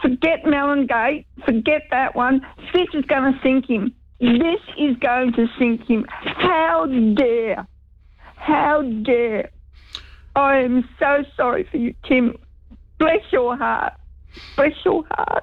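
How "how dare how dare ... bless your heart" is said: upset, distressed voice, breaking off. Offering sympathy after hearing news on the radio, upset. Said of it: "I'm too upset".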